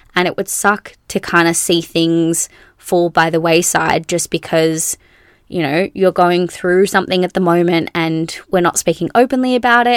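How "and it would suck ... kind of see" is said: ordinary delivery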